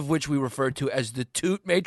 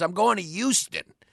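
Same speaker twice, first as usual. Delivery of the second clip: put-on New York Queens accent; 3 semitones higher than usual. Imitate how he pronounces Houston, throwing a Y in there, in a trash bag Queens accent impression. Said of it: "with his trash bag Queens accent".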